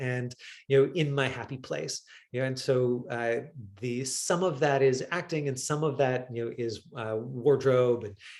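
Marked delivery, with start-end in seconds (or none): none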